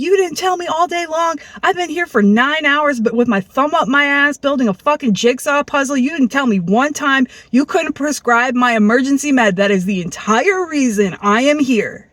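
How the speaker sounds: acted-out crazed, furious, heated, unhinged angry rant. Retelling a past argument, the speaker acts out their own yelling. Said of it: "So I'm yelling. I'm sounding crazy".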